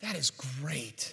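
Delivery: soft, earnest, heartfelt, sincere tone. Retelling a man's reply to the speaker, retelling a sincere remark. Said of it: "looks at me with all sincerity".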